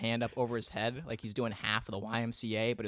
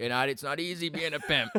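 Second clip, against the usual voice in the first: raised, high, strutting fake-confident swagger; 5 semitones higher, 5 dB louder than usual. Retelling what the father says in the kitchen: imitating his dad. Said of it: "he walks around the kitchen and he's like".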